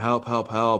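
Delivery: put-on frantic, panicked, pleading cries. Retelling an anxiety attack at the emergency room, re-enacting screaming for help. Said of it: "I'm like screaming in the emergency room".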